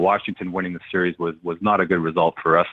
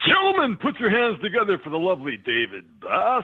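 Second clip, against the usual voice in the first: very high, swooping club DJ announcer hype; 12 semitones higher than usual. Asked to hear it, showing off a DJ voice on the show: DJ announcer voice. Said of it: "I can do my DJ voice for you".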